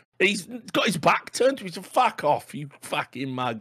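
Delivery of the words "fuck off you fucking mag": sudden put-on Cockney accent. Retelling a woodsman telling a hissing crocodile off: imitating a woodsman in Cockney accent. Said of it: "I don't know why he's a cockney all of a sudden".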